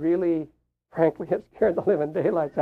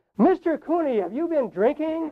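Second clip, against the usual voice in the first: mock shrill, very high, real loud voice; 10 semitones higher than usual. Retelling how the school counselor questioned him in front of everyone, loud voice. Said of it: "she said in a real loud voice".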